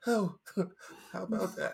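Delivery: calm, soft threatening tone. Imitating the mob boss from a movie, not raising the voice. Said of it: "he doesn't have to raise his voice".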